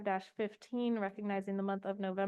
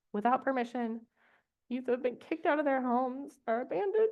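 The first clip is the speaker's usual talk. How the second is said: tearful voice, on the edge of tears; 3 semitones higher than usual. Reading a definition aloud to the group, the speaker is about to cry. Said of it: "I'm going to cry again".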